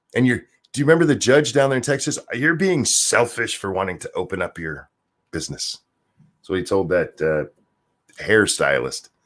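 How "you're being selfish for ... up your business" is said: quieter put-on evil-sounding voice. Retelling what a judge in Texas told a hairstylist, in a put-on evil-sounding voice. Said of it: "I'm going with a evil sounding voice".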